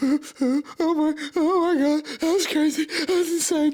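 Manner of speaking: mock, very high, slow, sobbing, tearful disbelief. Retelling running inside the house afterwards: imitating his own past crying. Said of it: "I'm just crying, just traumatized as fuck".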